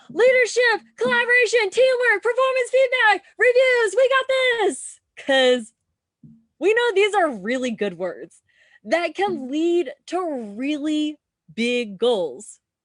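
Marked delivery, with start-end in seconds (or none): 0.2-5.0 very high, raised hollering. Mocking organizations and leaders who repeat big words: imitating leaders yelling buzzwords.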